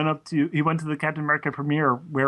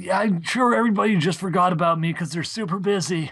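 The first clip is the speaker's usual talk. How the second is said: put-on smoker voice, higher; 3 semitones higher than usual. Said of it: "Soren kinda sounds a little bit like a smoker".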